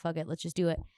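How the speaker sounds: normal talking voice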